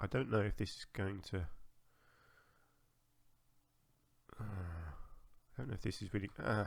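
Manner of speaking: muttering half-thoughts under the breath, distracted, unfinished. Thinking aloud while trying to work something out, mumbling. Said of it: "I'm just mumbling a little bit".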